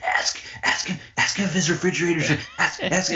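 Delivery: high eager voice. Retelling a crank phone call, imitating Skip egging on the caller. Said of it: "Skip's like that friend, like, when you're doing a crank phone call, he's like".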